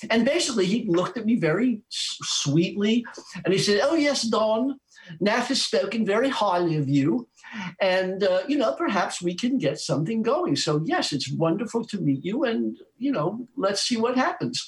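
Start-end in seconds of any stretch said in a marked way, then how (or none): 3.8-14.7 poor, bad put-on English accent. Retelling what a manager said at a first meeting: poor imitation of an English accent. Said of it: "I'm gonna do a poor imitation of an English accent".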